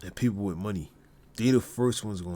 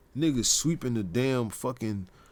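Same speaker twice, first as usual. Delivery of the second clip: ordinary talk, nothing marked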